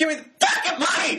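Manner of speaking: very high, shrill shouted yell. Describing a film character who yells when people react slowly, retelling a yell. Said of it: "he just starts yelling".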